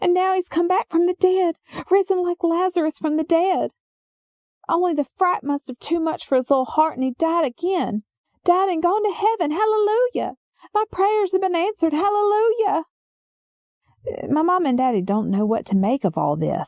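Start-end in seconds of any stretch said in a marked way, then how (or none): 0.0-12.8 high-pitched voice, pitched higher. Retelling a neighbor's panicked explanation: high-pitched voice. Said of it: "explaining in this high-pitched voice".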